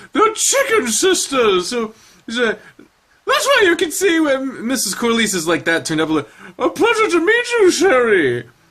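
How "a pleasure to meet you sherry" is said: high voice with a swooping pitch. Voicing a character greeting someone by name, Julia Child impression. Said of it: "I'll just do a Julia Child impression".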